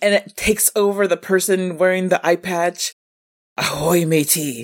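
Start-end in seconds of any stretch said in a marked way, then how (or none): 3.6-4.6 put-on pirate voice, lower. Pitching a horror film villain, an ancient pirate, giving his entrance line; pirate voice. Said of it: "Some ancient pirate is awoken".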